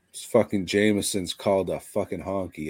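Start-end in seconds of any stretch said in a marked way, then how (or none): none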